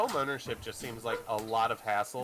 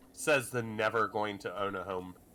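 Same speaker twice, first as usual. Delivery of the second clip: ordinary talk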